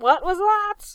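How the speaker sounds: sharp, snapping, shrill, high and loud. Narrator reads the bosun questioning a crewman, sharply. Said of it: "Said the bosun sharply".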